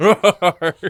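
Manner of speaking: high, loud laughing roar. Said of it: "Can you hear my roars?".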